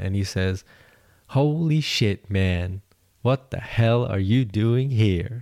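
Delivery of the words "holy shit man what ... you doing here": slow, distinct, unmistakable Texas drawl. Retelling what a young us marine said at a checkpoint, distinct texas accent. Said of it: "In a very distinct Texas accent".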